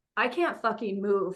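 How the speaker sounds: ordinary delivery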